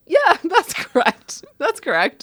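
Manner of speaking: laughing, high, swinging delivery. Acting out a transcript with a lawyer's questions, laughing while answering. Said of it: "Why are you laughing?".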